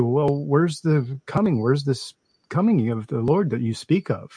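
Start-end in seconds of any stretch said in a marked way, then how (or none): none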